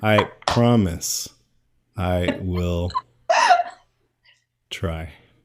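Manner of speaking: mock slow, drawn-out delivery with long pauses.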